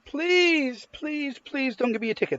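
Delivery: very high, desperate pleading tone. Acting out a driver begging an officer: imitating a driver pleading. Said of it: "That's pleading".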